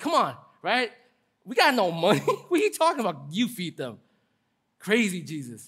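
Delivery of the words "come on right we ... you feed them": snarky, sarcastic retort with swooping pitch, acted. Retelling the disciples' answer to Jesus: imitating sarcastic disciples. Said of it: "So they're being sarcastic, like".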